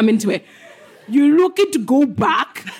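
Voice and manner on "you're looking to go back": put-on Austrian-accented voice, higher pitched. Reading a scene line as asked, Arnold Schwarzenegger voice. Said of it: "could you do it as Arnold Schwarzenegger?".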